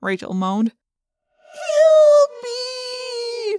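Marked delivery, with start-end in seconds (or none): 1.5-3.6 very high mocking cry, "me" drawn out. [name], after Rachel moans about a spiderweb, mocks: mocking The Fly's 'Help me'. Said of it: "[name] mimicked".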